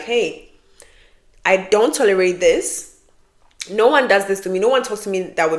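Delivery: ordinary talk, nothing marked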